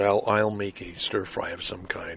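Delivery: ordinary delivery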